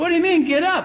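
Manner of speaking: high, silly put-on voice. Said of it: "my body would say".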